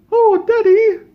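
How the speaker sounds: very high, very loud, shrill put-on British child voice. Retelling what the kids said on his arrival: imitating British kids. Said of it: "'cause they're British kids".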